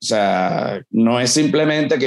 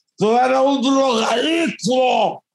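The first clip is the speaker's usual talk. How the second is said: put-on drunk voice, much higher, slower; 12 semitones higher than usual. Retelling what a drunk said to him on stage, imitating a drunk's voice. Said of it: "un borracho así con esta voz".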